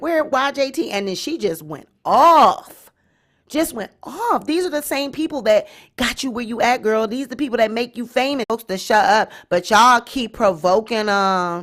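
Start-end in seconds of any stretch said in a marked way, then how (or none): 0.0-0.9 acted joking and laughing, much higher. Retelling how a girl asked her question before being cussed out, retelling a joking, laughing question. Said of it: "all joking and laughing like".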